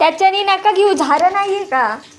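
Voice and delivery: loud shout.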